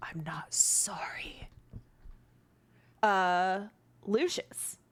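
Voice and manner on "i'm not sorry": whispered, breathy male voice. Game master voicing the angel Beatral to the players, Beatral's masculine whisper. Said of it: "a masculine voice of the angel named Beatral whisper".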